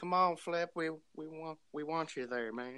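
put-on, whining Southern accent. Recounting someone's funny bit, in a whiny southern accent. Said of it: "the whiny, southern accent".

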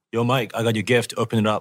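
put-on thick Lebanese accent throughout. Telling a story about a Lebanese friend, imitating Musa's Lebanese accent. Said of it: "he came out with this strong Lebanese accent".

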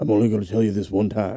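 stern, firm, strict delivery. Showing a friend an impression of the principal from a show: Chi McBride impression. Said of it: "This is my Chi McBride".

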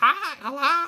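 shrill, loud, pushed way up in pitch. Discussing casting, the speaker demonstrates the shrill Toad voice. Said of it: "Toad has a very like shrill particular voice".

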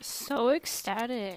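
a bit sarcastic, mild sarcasm. On a podcast, asked how you feel about a return, answer a bit sarcastic. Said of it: "That sounded a bit sarcastic".

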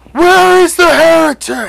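rough, slow, very high, very loud gravelly bellow. Game master voicing a huge zealot who greets the players, gravelly zealot voice. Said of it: "You step outside and you are greeted by the biggest zealot you think you've ever seen. ... And he looks at you and he speaks in this gravelly voice and he goes".

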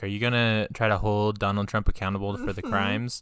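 plain

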